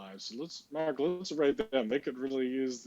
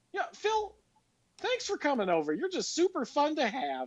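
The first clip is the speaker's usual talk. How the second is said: imitated 80s suburban mom, very high and sing-song. Recalling how they sounded, the speaker redoes their own line: 80s suburban mom voice. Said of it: "I totally sounded like a suburban like mom from the 80s".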